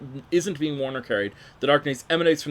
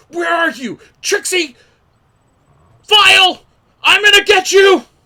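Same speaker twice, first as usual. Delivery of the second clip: enraged yelling, shrill and very loud; 14 dB louder than usual. Blinded by darkness, Tomlin curses someone he can't see, shouting angrily. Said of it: "Starts shouting".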